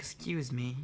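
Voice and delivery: sickly sweet, polite tone. Narrator reads a woman in the doorway interrupting an argument, sugar-sweet voice. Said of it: "she says in a sugar sweet voice".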